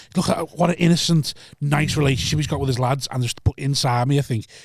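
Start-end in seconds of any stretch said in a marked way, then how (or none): none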